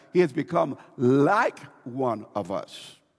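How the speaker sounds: the word "like" hit hard with heavy emphasis. Reading chapter 3, verse 22 aloud: stress on like. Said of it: "I got to put emphasis on that".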